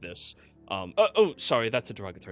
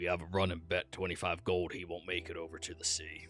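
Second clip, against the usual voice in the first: muttered quietly, lower and quieter; 7 semitones lower, 11 dB quieter than usual. Voicing a character telling another about a running bet: said under his breath. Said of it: "sneaking Kai in under his breath".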